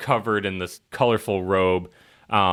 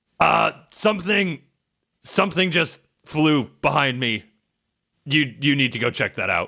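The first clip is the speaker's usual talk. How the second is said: pitched-up, loud yell; 7 semitones higher than usual. Voicing an old man on a ship calling to a guard: yelling. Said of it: "and he yells".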